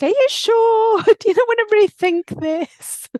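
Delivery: mock incredulous, disbelieving tone.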